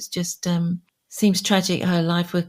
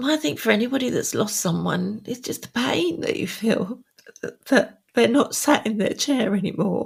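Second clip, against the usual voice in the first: speaking in tears, crying through words; 4 semitones higher than usual. Asked what feels difficult, [name] talks about losing someone, crying. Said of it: "Sorry, I didn't mean to cry".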